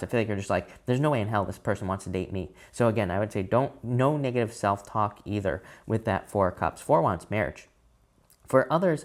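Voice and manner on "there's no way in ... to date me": usual speaking voice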